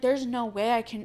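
ordinary talk

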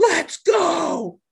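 mock, very high, shrill, loud scream. Recounting a player's reaction after scoring a goal: retelling a scream. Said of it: "he's just screaming".

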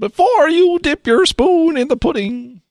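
clumsy, poor, very high-pitched delivery. Joking about pudding with friends: piss poor Bill Cosby impression. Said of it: "that's a piss poor Ho-, Cosby impression".

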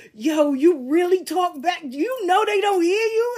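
high-pitched, amused voice, talking through laughter. Telling how police searching the house laughed at them: imitating cops laughing. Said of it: "they was laughing like".

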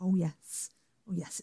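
put-on soft, reluctant, grudging northern English accent. Discussing an actress playing a northern character, the speaker imitates her northern delivery. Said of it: "such a northern delivery of like".

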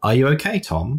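unhurried rising delivery. Retelling the mother-in-law turning slowly to ask: imitating mother-in-law asking slowly. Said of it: "she just turned her head around slowly and said".

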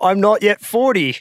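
put-on slow Australian accent with lisp. Joking about a film scene, doing a Ben Mendelsohn impression. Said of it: "Ben Mendelsohn being like".

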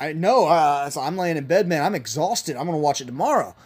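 usual speaking voice

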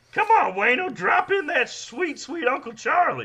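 very high, loud hollering, heckling voice. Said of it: "that voice".

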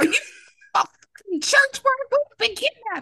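very high, shrill, yelled-out voice. Retelling how the speaker reacted to a scene, re-enacting own yelling at them. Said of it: "I'm over here yelling at them like".

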